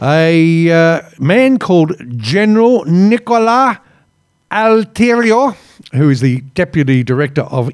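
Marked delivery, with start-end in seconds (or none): 1.2-5.6 fake Italian accent that comes out sounding German. Reading out an Italian general's name: put-on Italian accent sounding German. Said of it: "I sound German there, not Italian".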